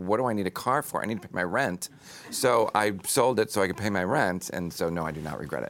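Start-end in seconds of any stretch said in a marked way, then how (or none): none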